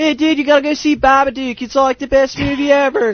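put-on gushing Philly accent. Imitating everybody hyping a movie: imitating people in Philly accent. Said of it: "Your Philly accent is, like, the, my new favorite thing".

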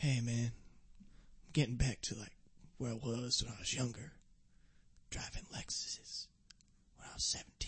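hushed, breathy whisper with almost no voice. During a podcast sponsor bit mentioning Lexus: Matthew McConaughey impression. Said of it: "Are you trying to do the Matthew McConaughey?".

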